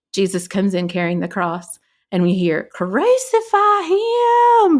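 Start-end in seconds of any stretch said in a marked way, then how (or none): 2.7-4.8 heaviest Southern drawl, very high pitch. Retelling a cry heard in a dark church, in the thickest Southern accent. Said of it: "in the most Southern accent you've ever heard".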